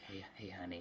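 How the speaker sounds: put-on creepy breathy voice. Describing how an old man might creepily address a waitress, mock creepy breathy voice. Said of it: "some creepy breathy voice".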